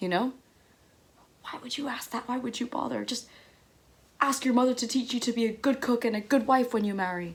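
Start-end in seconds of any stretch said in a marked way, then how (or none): 1.4-7.4 put-on harsh, furious, angry scolding. Retelling how an angry half-uncle scolded a four-year-old girl: imitating an angry scolding. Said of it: "as he scolded me".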